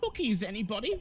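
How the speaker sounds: false sweet voice. A narrator voices her bringing a cookie jar to the table; false sweet voice. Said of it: "in a false sweet voice".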